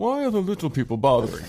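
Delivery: lofty, put-on, sing-song English accent. Repeating a quoted line back to the other speaker, in a high-minded English accent. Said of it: "that kind of high-minded English accent".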